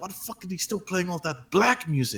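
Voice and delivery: very quiet mutter under breath, barely audible. Retelling what the guy at the next locker said: imitating a mutter under the breath. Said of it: "mutters under his breath".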